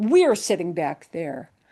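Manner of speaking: emphatic, strongly stressed we. Explaining how english emphasizes a word with the voice: stress on we. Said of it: "I'm just being emphatic about the we".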